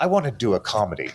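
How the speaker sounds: low, grave, completely serious delivery. Retelling what a film actor said about wanting a comedy: Gary Oldman's serious tone. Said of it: "his serious tone".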